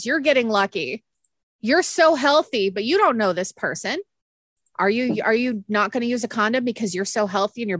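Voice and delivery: mock, very aggressive, ranting delivery. Quoting a man who's sick of the argument: retelling an aggressive rant. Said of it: "And he was super aggressive too".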